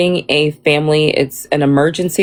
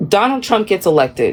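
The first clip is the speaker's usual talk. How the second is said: ordinary delivery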